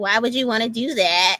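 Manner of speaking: put-on shaming tone. Imitating someone who shames you for going out alone: imitating someone shaming. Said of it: "That was a new voice".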